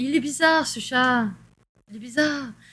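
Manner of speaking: European French accent gradually taking over the speech. Speaking to viewers, the speaker's French accent slips in. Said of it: "L'accent français qui pogne le dessus".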